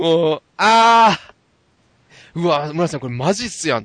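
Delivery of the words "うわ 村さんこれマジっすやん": ordinary talk, nothing marked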